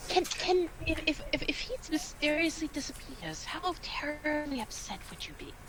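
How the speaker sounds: very quiet, hushed whisper. Voicing a character whispering a question to another character: whispering in character. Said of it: "Deku just whispers to, uh, to Dawson".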